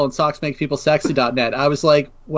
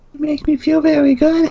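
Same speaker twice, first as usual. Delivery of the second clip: put-on creepy voice, much higher, louder; 13 semitones higher, 3 dB louder than usual. On a podcast, countering another host's creepy voice with a creepy voice. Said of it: "so I had to counter with my creepy voice".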